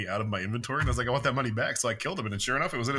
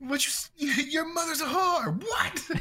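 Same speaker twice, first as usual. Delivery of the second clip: mock screaming, higher. Acting out a game character suddenly screaming at the player: imitating a game character screaming. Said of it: "screaming in the face of the person".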